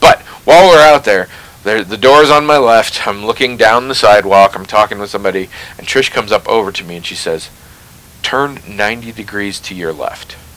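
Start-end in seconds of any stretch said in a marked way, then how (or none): 8.2-10.4 very quiet, very soft, hushed, under-the-breath voice. Retelling what a woman said as she came up to him: speaking very softly. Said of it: "She says it very softly".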